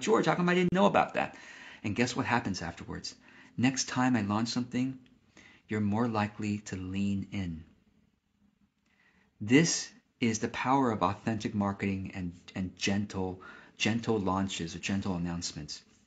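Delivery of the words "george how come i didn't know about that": high, fast, surprised blurt. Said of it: "You're like".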